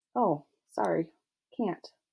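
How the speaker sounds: plain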